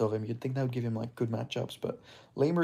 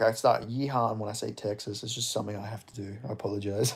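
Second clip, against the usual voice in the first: plain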